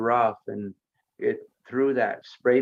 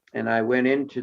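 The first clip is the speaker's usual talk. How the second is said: ordinary delivery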